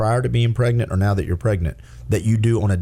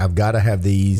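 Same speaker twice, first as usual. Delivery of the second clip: usual speaking voice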